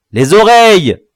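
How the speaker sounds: roaring, all-out bellow, high and loud. One of the captors answers the captive's question; bellowing. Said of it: "beugla Tintin".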